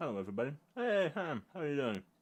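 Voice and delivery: talking with mouth full. Greeting everybody and Ham while eating cake, talking with mouth full of cake. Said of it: "with my mouth full of cake".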